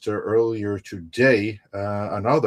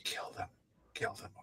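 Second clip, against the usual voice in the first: mock whisper, quieter. Acting out a character urging Pinocchio to kill: imitating someone whispering. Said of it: "whispering to Pinocchio".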